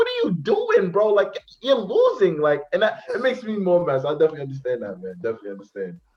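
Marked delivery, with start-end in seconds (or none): 0.0-2.4 taunting, exasperated tone. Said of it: "I'm like".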